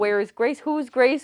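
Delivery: imitated panicked voice. Retelling own reaction while watching a show: imitating own past panic. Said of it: "I was starting to panic".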